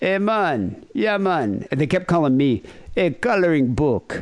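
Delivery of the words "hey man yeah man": laid-back Jamaican patois drawl, high and slow. Retelling what locals said on a cruise stop: imitating jamaican patois. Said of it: "these guys were like".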